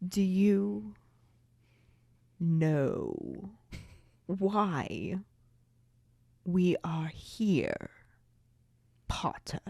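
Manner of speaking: low slow drawl. Imagining how Snape speaks to Potter in the story: Snape voice, lowered. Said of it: "he lowers his voice and says".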